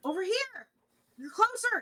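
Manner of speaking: very high, shrill, calling-out scream. Game narrator voices an unseen voice calling to players in a forest, screaming. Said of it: "it continues to scream".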